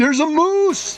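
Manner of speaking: loud, high-pitched yelling.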